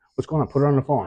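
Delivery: put-on frantic voice, high, loud and panicked. Retelling a phone call about his daughter: retelling own panicked words. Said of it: "I start panicking".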